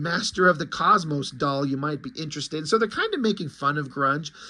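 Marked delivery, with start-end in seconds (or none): none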